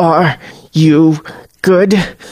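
hissed through clenched teeth, jaw clenched. Narrator reading a man's question to her, hissed through clenched teeth. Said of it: "he hisses through clenched teeth".

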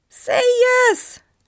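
shrill, very high, very loud shriek, "yes" stretched. Narrator reads the ghost urging the narrator to say yes; shrieking. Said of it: "shrieked the prêt".

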